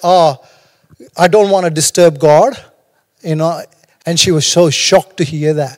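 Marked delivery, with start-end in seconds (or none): 0.0-2.6 mock playful, impish, cheeky teasing tone. Retelling own past answer to a couple heading to prayer: retelling own cheeky reply. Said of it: "and I was being cheeky".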